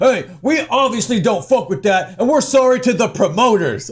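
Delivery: sarcastic, mocking put-on tough-guy voice. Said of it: "look at this big, tough response".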